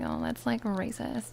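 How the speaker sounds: ordinary talk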